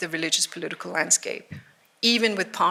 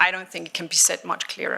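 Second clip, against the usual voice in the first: ordinary talk, nothing marked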